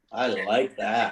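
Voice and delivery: slow, drawn-out approving tone. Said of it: "slow repeat of praise".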